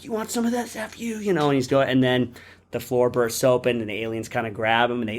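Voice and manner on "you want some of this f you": very high-pitched, wild, frenzied, crazed voice. Retelling a film scene where Hudson fires at aliens: imitating Hudson going crazy. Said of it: "he's just going crazy".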